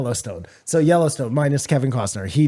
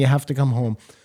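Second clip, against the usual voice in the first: put-on, tearful, crying voice. Retelling a phone call where a character begs someone to come home: imitating Beth crying. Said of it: "she's crying".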